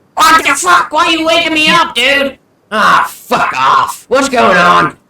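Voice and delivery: very high, shrill, high-pitched cursing yell. Voicing a king woken in the night by his guard: King Malwar shouting. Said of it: "you just hear King Malwar shout".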